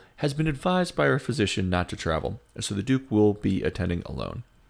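plain

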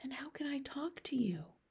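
hushed, very quiet, soft whisper. Sophie asks the BFG, whose ears hurt at her voice, how to talk, whispered. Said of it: "Sophie whispered".

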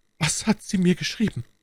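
feeble, faint, weak voice, very high-pitched. The bleeding duke in bed asks the messenger from France in a faint, weak voice. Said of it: "fragte der Herzog mit matter Stimme".

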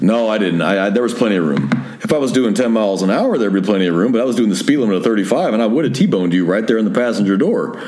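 ordinary talk

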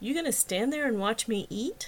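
ordinary delivery, nothing marked

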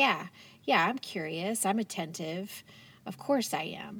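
usual speaking voice

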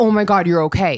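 totally frightened voice. Retelling a sister-in-law's call in a viral story: imitating someone frightened. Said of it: "totally frightened".

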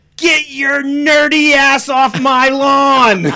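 very high, very loud, drawn-out scream. Retelling how a young cousin yelled at the group, imitating Evelyn screaming. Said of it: "One point she screams".

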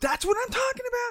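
mock, very high-pitched, overloaded, overwhelmed outburst. Retelling own words when overwhelmed at the deli: imitating an overwhelmed outburst. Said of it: "I'm on overload, I'm overwhelmed".

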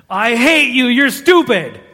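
furious outburst, high and loud angry yell. Recalling childhood anger at a brother, retelling a yell. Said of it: "so I yelled at him".

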